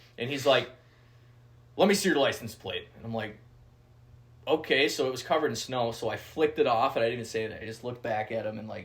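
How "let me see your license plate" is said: loud, mock-mad, demanding tone. Retelling a man questioning them about hunting, imitating an angry man. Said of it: "he's mad".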